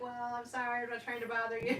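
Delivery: sorrowful, polite, apologetic tone. Recalling how you answered a threatening man, imitating a sad voice. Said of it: "you just sounded so like sad".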